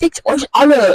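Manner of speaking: put-on high, very loud, disgusting voice. Acting out a celebrity artist from germany, a typical narcissist, imitating a super loud, disgusting voice. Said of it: "in his like super loud, uh, disgusting voice".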